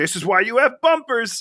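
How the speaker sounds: mock hollered yell, climbing in pitch. Retelling a movie scene where a character yells from a car: imitating someone yelling. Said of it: "he's yelling things like".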